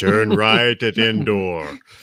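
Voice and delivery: booming sat nav announcer voice. Imagining a GPS with a famous voice, James Earl Jones GPS voice. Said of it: "James Earl Jones voice as a G P S".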